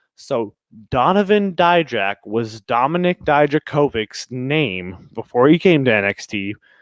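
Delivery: slow, low, deliberate, spelled-out pacing. Explaining a wrestler's confusing name changes to listeners, speaking slowly. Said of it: "So I'm going to try to speak slowly".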